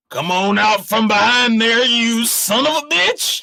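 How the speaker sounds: irritated shout, rising pitch. Voicing a sheriff calling at a hiding player: irritated sheriff calling out. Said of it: "the sheriff's voice drifts across the desert air, carrying a note of irritation".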